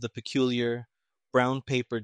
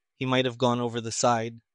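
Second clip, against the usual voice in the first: usual speaking voice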